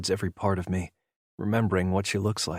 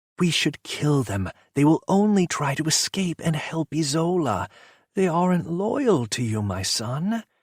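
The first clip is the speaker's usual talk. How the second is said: high, overly sweet, sugary, syrupy voice; 8 semitones higher, 4 dB louder than usual. Reading a story aloud, a mother urging her son to kill prisoners: overly sweet voice. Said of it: "in her overly sweet voice".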